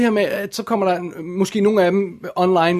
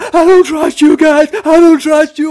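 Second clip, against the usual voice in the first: mock terrified, panicked cry, very high, very loud; 9 semitones higher, 11 dB louder than usual. Retelling a woman's words in a police car after arrest, imitating a woman in panic. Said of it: "bare sådan helt i panik".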